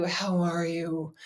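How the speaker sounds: soft, droopy, sorrowful, sad tone. Mimicking annoying people asking how are you, imitating a sad tone. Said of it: "it said it in a sad".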